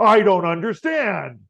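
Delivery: high, loud smart speaker assistant voice, yelling. Acting out a voice assistant shouting back at a shouting user: imitating Alexa shouting. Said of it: "Alexa starts shouting back at me".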